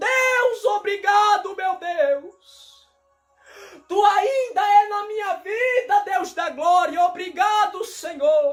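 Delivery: loud shout. Retelling waking up in the hospital thanking God: reenacting own shouting. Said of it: "eu acordei gritando".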